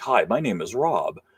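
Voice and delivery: slow, synthetic, machine-like computer narrator voice. Complaining about AI-made videos, imitating an AI narrator voice. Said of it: "the voice is like".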